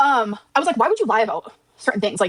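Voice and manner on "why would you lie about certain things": ordinary delivery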